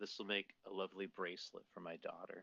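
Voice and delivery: muttering quietly, as if to oneself. Playing a character who thanks a quartermaster, then muttering under breath. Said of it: "under my breath I go".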